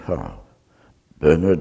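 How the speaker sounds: put-on very thick, strong Welsh accent. Retelling a visitor's greeting at the door, in a very welsh accent. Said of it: "he very Welsh accent".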